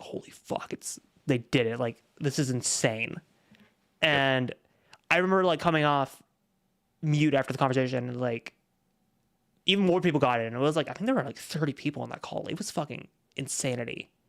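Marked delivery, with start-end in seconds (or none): 0.0-3.2 put-on freaking-out exclamation, losing it. Recalling the Star Wars episode coming out at 3 a.m., retelling own freaking out. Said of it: "I just remember like freaking out".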